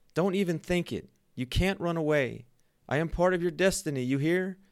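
crying out with a very high pitch. She calls after a man who says he is leaving forever, crying out. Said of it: "she cried".

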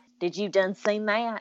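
put-on backwoods hillbilly accent. Mocking how people talk in a lot of these films, hillbilly voice. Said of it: "people have these hillbilly voices and they're like".

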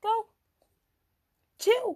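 very high, cracking, breaking exclamation. Telling chat about an argumentative friend, voice breaking. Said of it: "Why is my voice breaking so much?".

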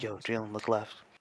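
put-on scared, dire voice. Retelling a warning he was given, mimicking a scared, dire voice. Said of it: "like I was about to fucking die".

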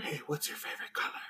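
fast, breathy, hushed whisper. Mocking a guy on a first date at the movies, acting out a whisper.

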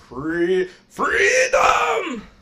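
very high, breaking, cracky voice. Repeating another speaker's word "freedom": cracky voice. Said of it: "my voice is really cracky today".

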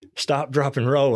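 acted-out yell. Recounting being on fire, acting out what the wife yelled: retelling the wife's yell. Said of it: "she's yelling".

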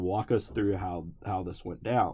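ordinary talk

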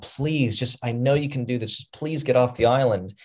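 desperate, begging, pleading tone. Recapping a scene, the speaker quotes Madeline, imitating Madeline begging. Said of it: "she's like literally begging at this point".

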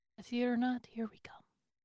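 whispering. Going carefully back into the Yeti cave with the party; whispering. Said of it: "I'm gonna whisper".

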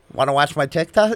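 normal talking voice

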